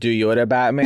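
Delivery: ordinary delivery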